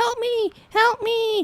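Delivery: put-on little kid calling out, very high, very slow, drawn-out. Retelling a scene where a child calls for help: imitating a little kid calling for help. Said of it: "clearly a little kid going".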